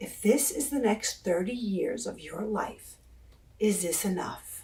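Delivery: imitated whispered voice. Retelling the question an inner voice asked: retelling a whisper. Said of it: "the voice asked me clearly in a whisper".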